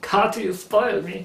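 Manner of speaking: fake German accent. Quoting what she originally said about going to the shop, in a faux German accent. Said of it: "the rest of that sentence was a German accent".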